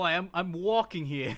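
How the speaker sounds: put-on New York accent. Giving an example of an accent they don't have, in a New York accent. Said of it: "like you know the New York accent".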